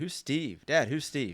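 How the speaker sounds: very slow, high, drawn-out hollered call. Imagining the kids calling down to their dad: imitating kids yelling. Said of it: "yelled down at you".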